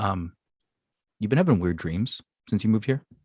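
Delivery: voice dropped low. Retelling how a man leans in to ask her about her weird dreams, lowered voice. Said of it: "lowers his voice and says".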